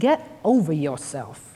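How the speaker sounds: put-on thick, laid-on Brooklyn accent. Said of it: "in his very Brooklyn accent".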